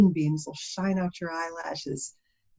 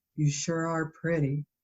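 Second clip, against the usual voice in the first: quieter put-on monotone voice; 3 dB quieter than usual. Retelling a teen bagger at Kroger complimenting a customer: John's flat monotone voice. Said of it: "he's got that monotone voice".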